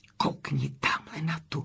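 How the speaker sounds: soft, hushed whisper aside. Narrator reads herself pointing out a woman in the crowd to a friend: whispering. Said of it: "zašeptala jsem Kamy".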